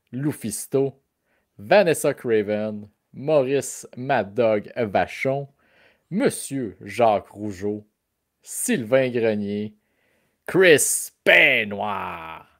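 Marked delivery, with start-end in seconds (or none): 10.5-12.4 big, heavily emphasized, emphatic intonation. Listing wrestlers' names, the speaker gives this one big emphatic intonation. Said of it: "tu donnes une full grosse intonation à Chris Benoit".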